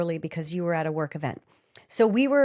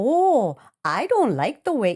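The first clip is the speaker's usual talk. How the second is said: attempted Minnesota accent, high, drawn-out, off the mark; 5 semitones higher, 5 dB louder than usual. Retelling a movie scene as the counter woman: attempted Minnesota accent. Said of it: "I'm trying to do Minnesota".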